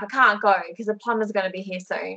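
ordinary talk

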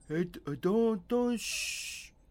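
slow, high pitched, mumbling, halting stammer. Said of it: "He's just kinda like".

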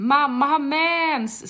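put-on blurted-out, loud, high child's yell, "mens" drawn out. Mother recounts her three-year-old at a crowded hotel pool, retelling a child's yell. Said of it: "skrek min 3-åring rakt ut".

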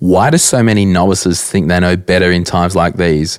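ordinary talk

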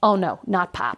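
mock very slow, stony, dead-serious delivery. Retelling how a man's face went stony: imitating a stony-faced man. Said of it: "His face goes stony".

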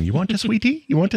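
put-on South African accent, pitched very high. Quoting a film character talking to a little alien kid: South African accent. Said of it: "his whole thing with that accent, that South African".

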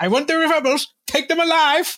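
very high, loud, harmless voice with zero menace. Mock how the original actor spoke his lines, in the original Darth Vader actor's unintimidating voice. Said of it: "his voice is not intimidating".

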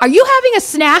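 very high, as loud as possible, blurted. Retelling what the child asked in the bathroom: imitating a loud question. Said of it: "loud as can be".

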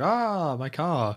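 put-on French accent. Retelling a taxi driver chasing his stolen car: imitating a fake french voice. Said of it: "such a fake French voice".

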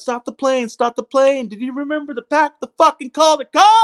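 acted yelling. Recounting yelling at the pilot over the phone, retelling a yell. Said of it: "I'm yelling at the pilot".

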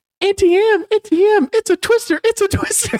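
very high, feminine-sounding man's voice. Quoting a movie scene the speaker and their boss kept repeating, imitating a feminine-sounding man. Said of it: "he sounds like very feminine".

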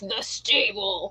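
affected, put-on, trying-to-be-cool cool-guy voice. Showing how a name only sounds cool one way, put-on cool voice. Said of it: "if you say it in a cool voice".

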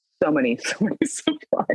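laughing through the words while speaking.

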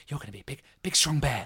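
soft, hushed whisper. Acting out a mother bear talking to her unborn cub: whispering. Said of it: "whispering to her Tom".

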